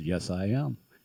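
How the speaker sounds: seductive, come-hither, sexy put-on voice. Telling a joke, voicing the woman at the bar: Bill's sexy voice. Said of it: "Bill's sexy voice says".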